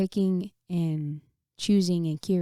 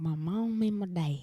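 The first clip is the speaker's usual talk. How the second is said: put-on slow, with a slight touch of country accent; 4 dB quieter than usual. Speaker repeats their own earlier words about their parents, with a slight country accent. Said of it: "I had a little country accent at the end".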